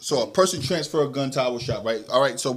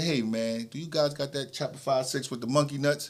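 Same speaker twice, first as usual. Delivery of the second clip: smooth, soft-spoken, easy delivery; 6 dB quieter than usual. Retelling what an older gentleman asked in the store: imitating a smooth-talking customer. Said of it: "smooth like this".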